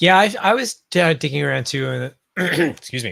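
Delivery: voice cracking mid-sentence, high-pitched and loud. Speaker joins the discussion, admitting they were digging around too; voice cracking. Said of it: "my voice just broke".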